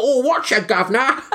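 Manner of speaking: put-on comic, hilarious Cockney accent, pitched very high. Recalling an actor's line from a film, in a hilarious Cockney accent. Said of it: "The most hilarious Cockney accent you'll ever hear. He's like".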